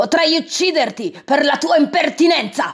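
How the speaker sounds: high, furious, enraged samurai-style yell. An insulted samurai draws his sword on the master, furious shout. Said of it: "si infuriò ... gridò".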